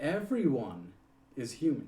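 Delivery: heavy stress landing on human.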